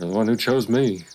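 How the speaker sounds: muttered quietly under the breath. Player in character, adjusting armor, mutters a remark under the breath. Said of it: "I'm gonna say under my breath".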